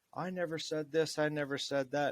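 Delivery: put-on high, loud screaming rant, going on and on. Retelling an argument over fuelling the car: imitating someone screaming. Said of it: "he just kept screaming about".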